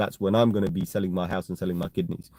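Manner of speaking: ordinary delivery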